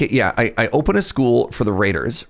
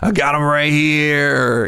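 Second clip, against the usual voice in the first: slow, menacing, pitched up, with drawn-out here; 4 semitones higher than usual. Speaker voices a character's line: menacing. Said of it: "he says menacingly".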